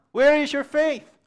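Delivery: loud high cry.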